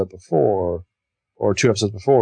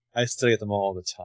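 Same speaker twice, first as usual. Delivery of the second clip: instant, quiet, flat deadpan comeback; 3 semitones lower, 8 dB quieter than usual. Retelling a conversation, acting out a deadpan reply. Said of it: "instantly deadpan".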